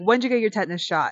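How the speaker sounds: fast, yelled delivery. Recounting a man yelling at her from his table, retelling a yelled question. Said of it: "he starts yelling at me from his table".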